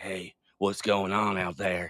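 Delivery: slow, drawn-out put-on Southern accent. Mimicking his voice in every movie, Norman Reedus movie Southern accent. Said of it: "that southern accent that he puts on in movies".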